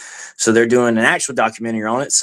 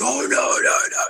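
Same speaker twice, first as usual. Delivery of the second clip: mock small, startled outcry from a group; 14 semitones higher than usual. Retelling how everyone reacted to a wrong pocket: imitating people screaming. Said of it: "everybody starts screaming like".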